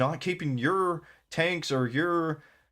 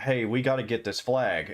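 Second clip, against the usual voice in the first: normal talking voice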